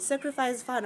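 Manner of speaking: ordinary talk, nothing marked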